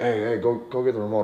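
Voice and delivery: soft, laid-back, offhand, nonchalant tone. Showing how he asks a girl for things at home, the speaker gives a nonchalant casual request. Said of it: "You see how it's nonchalant?".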